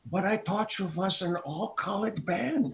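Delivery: put-on German accent throughout. Speaker retelling what a man who met the band said, in a German accent. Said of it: "he comes up with a German accent and he says".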